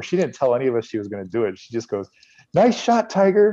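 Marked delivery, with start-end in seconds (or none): 2.5-3.5 put-on very high, loud, tiny five-year-old girl voice. Retelling a woman calling out to a golfer on the fairway, imitating a 5-year-old girl's voice. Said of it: "sounds like a 5-year-old girl saying it".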